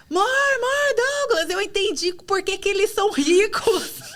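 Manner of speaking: very high, overjoyed excited shouting. Retelling the day she understood leverage, calling her husband: retelling her own excited shout. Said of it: "Eu comecei a gritar".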